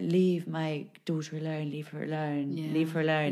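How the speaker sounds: put-on slurry, drunk-sounding speech. Speaker retells what a woman in a coma said, imitating a slurry, drunk-sounding voice. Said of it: "in a really sort of slurry voice".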